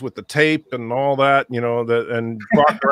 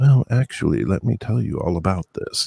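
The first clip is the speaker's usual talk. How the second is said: put-on public radio announcer voice, lower pitch; 6 semitones lower than usual. Praising another person's voice, imitating Darren as an NPR host. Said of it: "Darren should be an N P R guy".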